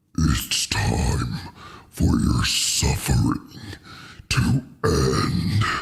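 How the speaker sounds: very low, deep villain or monster voice. Speaker does a voice and asks the others to guess it, Vecna voice. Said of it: "Can anyone guess that voice?".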